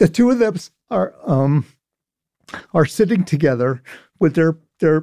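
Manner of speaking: choked-up, verklempt voice catching.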